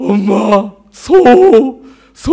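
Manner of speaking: put-on high, loud sobbing child voice.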